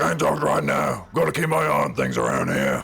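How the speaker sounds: gruff, rough orc voice. While playing a game, the speaker voices their character in an Uruk-hai voice. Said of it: "It's the only voice I can do".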